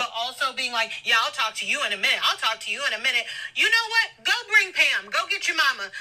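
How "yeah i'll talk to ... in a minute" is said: patronizing, condescending, dismissive talking-down tone. Retelling how Bartise answered her mom, imitating a condescending tone. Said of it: "in the condescending tone that he was speaking in".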